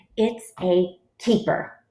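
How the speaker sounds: usual speaking voice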